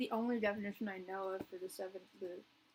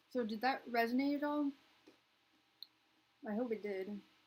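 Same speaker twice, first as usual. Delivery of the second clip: talking while chewing, much slower; 3 semitones higher, 3 dB louder than usual. Checking in with the listener while eating, mouth full, munching. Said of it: "Sorry, I'm just like munching".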